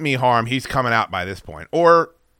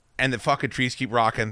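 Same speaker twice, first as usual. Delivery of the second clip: usual speaking voice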